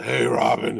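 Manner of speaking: low breathy put-on voice. Recalling old Batman cartoons, the speaker mimics Adam West in a breathy voice. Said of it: "they sounded so breathy".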